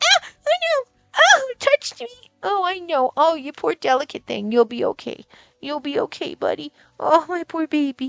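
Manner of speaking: teasing, over-the-top coddling, fussing voice. Teasing a bird after bumping its toes on the perch: mock fussing. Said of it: "I'm making fun of you".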